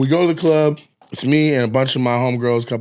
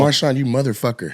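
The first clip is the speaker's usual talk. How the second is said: ordinary delivery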